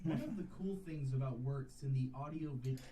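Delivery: hushed, very drawn-out, very slow narration. A clip from the speaker's earlier video plays, talking very slowly. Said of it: "sounds like it's literally slowed down".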